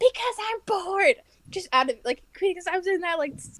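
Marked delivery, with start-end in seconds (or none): 0.0-1.2 high-pitched yelling. Recounting answering the principal who yelled at them in the bathroom, retelling a yell back. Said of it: "And I yelled back".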